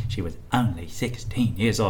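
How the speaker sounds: very quiet, hushed murmur. Maura has asked you to do Michael Caine; answer with a very quiet Michael Caine impression. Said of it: "I like very quietly said".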